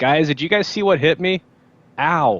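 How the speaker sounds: loud, high-pitched yelling and hollering. Playing a deafened character asking the group what hit: yelling really loud. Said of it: "I'm actually yelling really loud".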